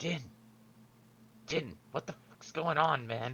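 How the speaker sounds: very soft half-whisper, high and very quiet. Calling down to a character through the bars: half-whisper. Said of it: "I'm gonna whisper down there".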